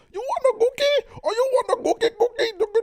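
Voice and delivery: put-on Indian accent. Speaker recalls a scene, quoting Michael Scott in his mock Indian accent. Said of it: "he's making like an Indian accent".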